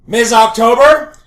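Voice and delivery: booming, very loud, high-pitched shout. Calling out in character across the library: full command voice. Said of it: "And I go to full command voice".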